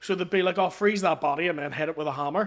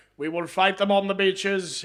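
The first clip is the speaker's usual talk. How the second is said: rousing, rallying wartime prime minister speech voice. Retelling a wartime TV speech: Churchill impression. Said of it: "Churchill was on T V being like".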